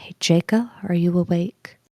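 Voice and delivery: mild, easy, gentle low-key delivery. Voicing a character at a sleeper's bedside: softly. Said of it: "she'll kinda say".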